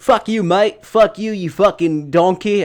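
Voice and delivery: slow, drawn-out, fake Australian accent. Retelling what they did not say while doing their job, put-on australian accent. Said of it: "put on an Australian accent".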